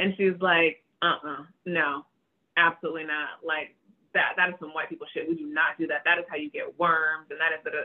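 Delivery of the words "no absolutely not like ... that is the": ordinary talk, nothing marked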